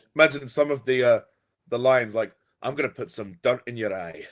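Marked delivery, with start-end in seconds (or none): 2.6-4.3 quieter, put-on Scottish accent. Imagining Spider-Man lines performed with a Scottish accent, in a Scottish accent. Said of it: "in his accent".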